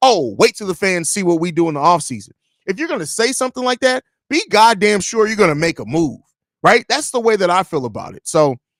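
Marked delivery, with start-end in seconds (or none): none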